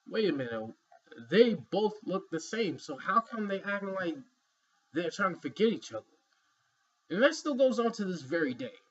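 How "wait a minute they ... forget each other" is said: usual speaking voice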